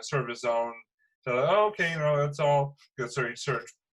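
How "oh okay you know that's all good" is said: sarcastic, feigned, acted out, pitched up, dismissive. Retelling how Mark answered a man on campus: imitating Mark being sarcastic. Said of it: "sarcastic way".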